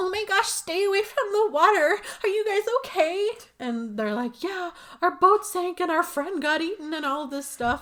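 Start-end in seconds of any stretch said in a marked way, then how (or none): 0.0-3.3 put-on sweet innocence, very high raised voice. Retelling how Barb greets the group walking over: Barb's put-on super innocent voice. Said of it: "Barb puts on like this super innocent voice".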